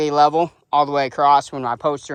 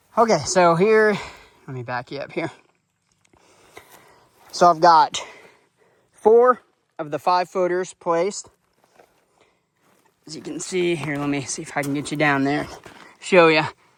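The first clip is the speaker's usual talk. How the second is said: winded, huffing and puffing between phrases. Showing viewers his placed footers on camera, huffing and puffing. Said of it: "Sorry, I'm huffing and puffing".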